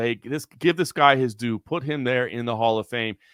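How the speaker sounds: ordinary talk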